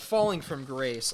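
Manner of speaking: normal talking voice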